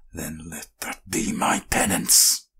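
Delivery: snarled words. A narrator reads a character's line spoken out loud, snarling. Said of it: "he snarled out loud".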